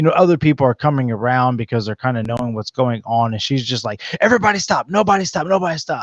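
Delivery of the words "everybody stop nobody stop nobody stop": put-on, high-pitched shouting, repeated over and over. Retelling how a woman on the beach yelled at the group: imitating a woman yelling. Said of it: "yelling at us".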